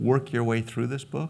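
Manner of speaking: stress on work.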